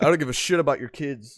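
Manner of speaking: ordinary talk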